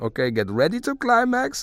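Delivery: high Hungarian-accented voice.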